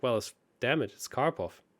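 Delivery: plain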